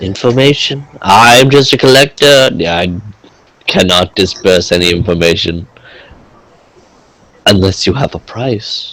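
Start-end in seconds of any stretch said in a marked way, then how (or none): 2.8-8.9 hushed, under the breath. A collector tells someone seeking information he wants a price: hushed voice. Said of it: "He says underneath uh, a hushed voice".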